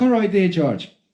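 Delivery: put-on female voice with Irish accent. Retelling a conversation with an Irish lady, imitating Kathy's Irish accent. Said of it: "this Irish lady".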